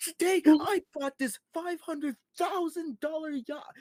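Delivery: very high, very loud, hyped-up voice. Describing fast-paced YouTuber content, the speaker mimics it in a really high voice. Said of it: "really high voice".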